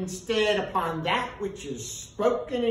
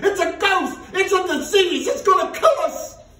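shrieking panic, very high, very loud, terrified; 12 semitones higher, 10 dB louder than usual. Narrating the disciples seeing Jesus walk on the lake, terrified. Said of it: "they were terrified".

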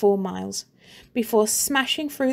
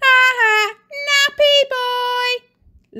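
very high, shrill, loud jeering taunt with mocking laugh; 8 dB louder than usual. Other kids tease a boy: laughing, mocking. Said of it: "Laughed the other kids".

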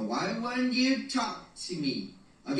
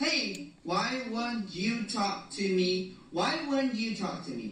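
ordinary talk

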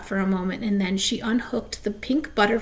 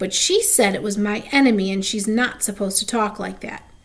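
ordinary delivery, nothing marked

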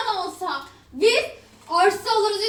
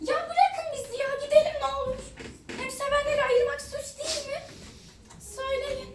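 put-on very angry, high, furious girl's voice; 5 semitones higher, 5 dB quieter than usual. Telling a story, voicing a girl who got very angry, acting out a very angry girl. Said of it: "Kız çok sinirlendi".

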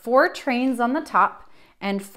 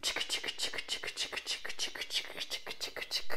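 soft whispered chick-chick chugging sound. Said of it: "making a".

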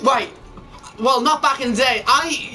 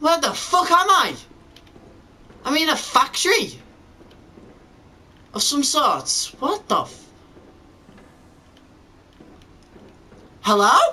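nervous, trembling, frightened voice; 2 semitones higher than usual. Playing a game, lost in a factory and calling out: scared and shaking. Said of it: "I'm shaking!".

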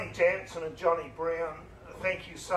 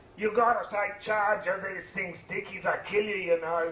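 put-on lovely Dutch-accented voice; 3 semitones higher, 3 dB louder than usual. Recalling a man's warning on his first flight in gusty wind, in a Dutch accent. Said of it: "in his lovely Dutch accent".

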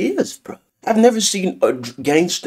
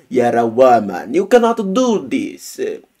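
put-on Italian accent, old-time gangster voice. Quoting what old-time cartel gangsters told her, in an Italian accent. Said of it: "I don't know why I'm speaking with an Italian accent".

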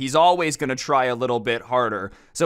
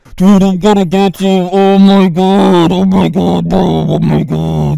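mock very loud, very slow, rough, distorted angry yelling; 6 semitones higher, 12 dB louder than usual. Retelling an opponent's mic rant, imitating an angry gamer yelling into a peaking mic. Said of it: "That's my best imitation of it".

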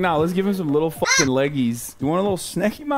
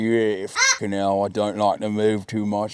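put-on old British gangster voice; 10 semitones lower than usual. Imagining how the creature would talk, in an old British mob boss voice. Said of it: "vibes of like an old British mob boss".

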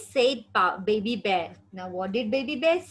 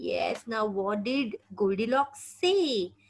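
ordinary delivery, nothing marked

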